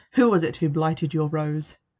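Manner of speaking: ordinary delivery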